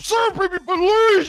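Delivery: whiny, begging heavyset-man voice. Voicing an overheard NPC down the hallway, stereotypical fat guy voice. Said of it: "stereotypical fat guy who's like".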